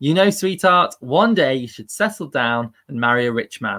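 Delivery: ordinary delivery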